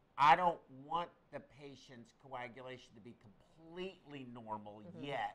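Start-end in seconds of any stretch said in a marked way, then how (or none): none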